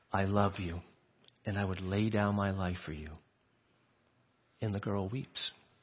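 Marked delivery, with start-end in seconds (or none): 0.1-3.0 soft, hushed, voiced stage half-whisper. Picturing a father holding his daughter: imitating a father half-whispering. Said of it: "he whispers to her".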